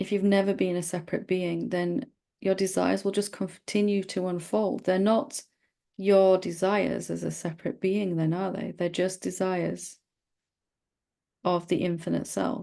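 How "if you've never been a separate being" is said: stress on the word "never". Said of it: "repeated line, prominence moves".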